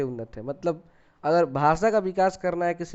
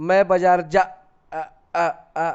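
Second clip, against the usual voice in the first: stuttering, getting stuck mid-word, louder and slower; 4 dB louder than usual. Explaining stammering to listeners, demonstrating stuttering. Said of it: "हकलाना".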